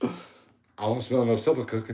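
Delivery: put-on bossy, chauvinistic, old-school man-of-the-house voice. Showing how they jokingly talk on coming in at home, mock old-school chauvinist. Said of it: "old school chauvinistic".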